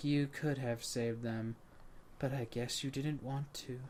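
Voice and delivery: very quiet, low, hushed, flat monotone. Describing a game's neutral ending, quoting the woman speaking: monotone woman's voice from the game. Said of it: "more monotone where she's like".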